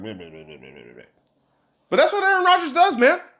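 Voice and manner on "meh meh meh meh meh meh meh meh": lower, much softer mocking mumble under breath. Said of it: "says stupid shit under his breath".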